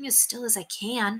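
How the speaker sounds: quiet, grumbling mutter under the breath. Narrator reading William's reply after the knight snapped at him, muttered. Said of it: "William muttered".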